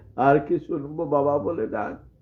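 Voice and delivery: normal talking voice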